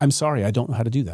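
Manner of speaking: sincere, genuinely apologetic, truly sorry tone. Modeling how to deliver an apology and mean it, sincere, genuinely apologetic. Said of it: "Deliver it the way I did now. ... to sound like you're genuinely apologetic".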